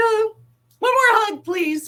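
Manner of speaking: very high, drawn-out, put-on tearful crying voice. Retelling asking for one more hug: imitating own tearful plea. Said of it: "I was crying, like".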